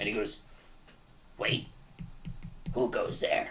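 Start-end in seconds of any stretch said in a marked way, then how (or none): 1.4-3.5 half-whispered, groggy, breathy small goblin voice. Game master voices a small goblin guarding a door as the party arrives: groggy little goblin voice. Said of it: "He's got a groggly little voice for such a small goblin".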